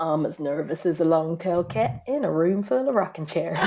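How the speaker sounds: exaggerated folksy, countrified, homespun delivery. Retelling what the partner said at the airport: imitating partner's folksy proverb voice. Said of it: "fantastic impression of him".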